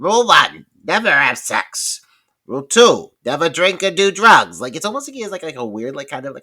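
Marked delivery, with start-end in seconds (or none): 0.0-4.6 put-on very loud, slow delivery with a slight Jersey accent. Praising how a character delivers horror rules: Randy impression, hint of Jersey accent. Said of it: "He's like".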